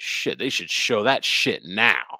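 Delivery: put-on yelling. Retelling how a man yelled at a movie trailer, imitating someone yelling. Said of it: "he just yells at it".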